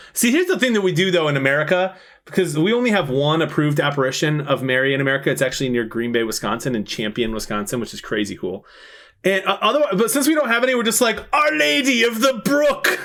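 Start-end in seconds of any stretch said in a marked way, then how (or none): 11.4-12.9 put-on Irish accent, very high and slow. Joking about American names for Mary places: Irish accent. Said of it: "you went to an Irish accent".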